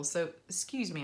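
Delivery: ordinary talk, nothing marked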